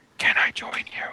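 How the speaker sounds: whispered, breathy, pleading. Voicing a kneeling minion who asks to join: whispering minion. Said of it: "you can hear him whisper".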